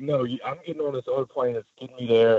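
angry, mad, arguing-back tone. Retelling how a furious friend insisted on another plane: imitating an angry friend. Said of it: "my buddy is so mad".

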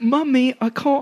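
put-on, high-pitched English little boy voice. Riffing about being carried around Disney World as a boy: English little boy voice. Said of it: "I turn to like an English like boy".

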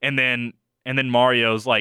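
ordinary talk

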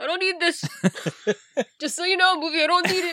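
odd, high put-on voice, yelling out. Recalling yelling at the movie during Toy Story 4: put-on voice retelling yelling. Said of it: "I don't know what that voice you're doing is".

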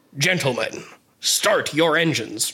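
put-on radio announcer voice. Retelling how Captain Thorpe starts the rowboat race, Captain Thorpe's radio announcer voice. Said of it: "in his best radio announcer voice".

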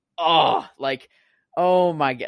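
loud gasp of awe.

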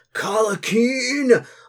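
big, booming, bellowing, very high-pitched shout. Voicing a drunk man calling a name from behind: booming voice shouting a name. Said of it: "you hear this booming voice say".

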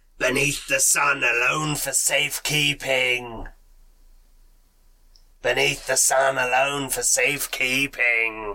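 strange, eerie, unsettling voice. Narrator voicing a strange voice heard after the glass is touched, strange creepy voice. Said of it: "Like a strange, creepy voice".

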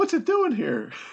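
put-on falsetto, very high pitched. Reading a girl's part aloud after being told to use falsetto. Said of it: "Just use your falsetto voice".

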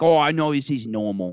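put-on odd, weird Australian accent, high, slow, stretched out. Retelling what a man said about fingering crocodiles, in a weird Steve Irwin accent. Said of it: "That was a weird accent".

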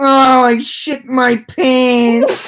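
put-on high, very slow, drawn-out, utterly pitiful voice. Retelling what he said right after a spasm, imitating a sad, pathetic voice. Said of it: "in the saddest, most pathetic voice I've ever heard".

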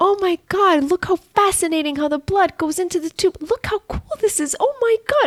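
very high excited gush. A speaker retells her own reaction to a finger poke, mock-excited Blippi voice. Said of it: "I sound like Blippi, like the character on TV".

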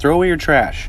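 acted-out high, loud yelling. Retelling yelling from a car window at people in a parking lot, retelling a yell. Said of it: "I yelled at them".

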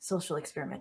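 half-whispered, soft, quick stage whisper. Leaning over to another character in the game, half-whispering. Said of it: "and I whisper".

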